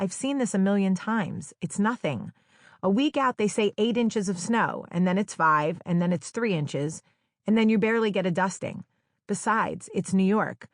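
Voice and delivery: plain reading voice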